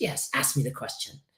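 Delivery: soft, breathy, near-whispered speech. Acting out her answer to the therapist's request to ask a question, as a Stephanie impression. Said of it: "I'm doing a good impression, by the way".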